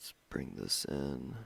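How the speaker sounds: very low, quiet under-the-breath mumble. Narrating a video edit right after apologizing for mumbling, mumbling. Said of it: "I go right back to mumbling".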